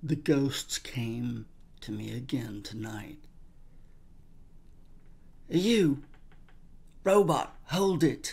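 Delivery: put-on British accent, read aloud. Reading Judge Dredd aloud for a Let's Read episode, in a British accent. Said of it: "I don't know why I have a British accent now".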